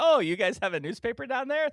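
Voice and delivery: put-on patronizing voice. Mocking how someone from up north might talk: mock condescending tone. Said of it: "that really, um, slightly insulting thing where you're gonna be like".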